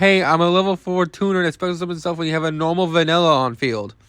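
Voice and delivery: ordinary delivery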